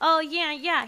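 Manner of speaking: imitated nasally voice. Retelling what a role-play player said: imitating a nasal voice. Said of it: "That's his, like, voice. It's, like, nasally".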